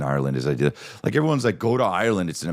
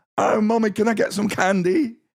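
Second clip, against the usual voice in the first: put-on high-pitched London child's British accent. Mocking how even kids in London talk, doing a London kid's accent. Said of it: "this accent's just for everybody? Kids and shit?".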